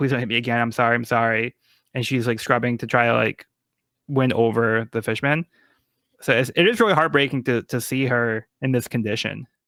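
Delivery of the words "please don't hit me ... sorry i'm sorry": mock frightened, fearful pleading tone. Retelling how she apologizes to the fishmen while scrubbing: imitating frightened apologizing. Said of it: "she's apologizing".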